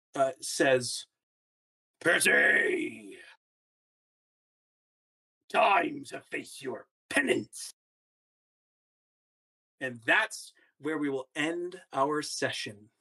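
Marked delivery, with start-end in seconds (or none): 2.0-7.8 spectral pirate captain voice, rough and creaky. A game master voices a ghostly captain pointing its sword at the players, ghostly captain voice. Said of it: "a ghostly captain pointing its sword at you".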